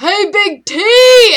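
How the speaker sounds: very loud, high-pitched shout. Playing a character calling to another across the cars: shouting in character. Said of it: "I'm just gonna shout".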